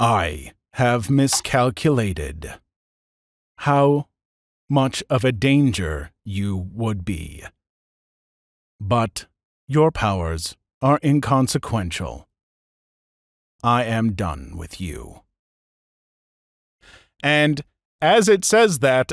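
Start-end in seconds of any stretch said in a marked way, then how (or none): 0.0-15.2 low voice of an ancient machine intelligence. Voicing an ancient AI that speaks to the players: voice of Relic. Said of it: "you hear a voice emanate from this thing".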